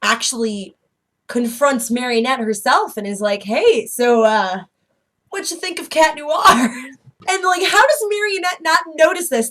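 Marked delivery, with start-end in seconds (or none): 3.4-6.7 put-on flirty voice, slower. Recapping an episode, acting out a character's line to Marionette, mock-flirtatious. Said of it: "and he's flirtatious".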